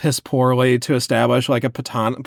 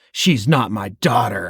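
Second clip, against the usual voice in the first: low, threatening, menacing voice; 3 semitones lower than usual. Reading a book scene aloud where a man warns a waiter: low, threatening tone. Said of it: "I say in a low, threatening tone".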